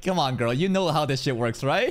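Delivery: normal talking voice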